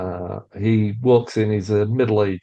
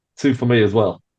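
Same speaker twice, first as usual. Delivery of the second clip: put-on English-accented speech, British accent. Voicing a character ordering two beers too: British accent. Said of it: "You'll notice he's got a British accent".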